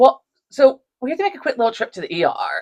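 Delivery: acted nonchalant, casual tone. Retelling telling Joe about the ER trip, imitating own nonchalant tone. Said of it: "it's very nonchalant about it".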